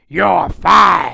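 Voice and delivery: very loud, rough, barking delivery. Doing a quick impression of the wrestling boss firing someone: Vince McMahon impression. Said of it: "I used to do it all the time".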